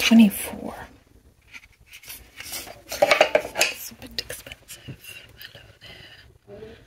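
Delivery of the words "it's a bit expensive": soft whispering. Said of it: "I'm just whispering the whole time".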